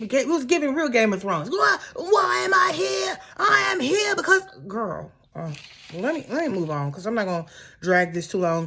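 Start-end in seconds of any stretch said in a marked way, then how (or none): 1.5-4.4 very high, stretched-out, drawn-out screaming. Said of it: "Uber gets screaming".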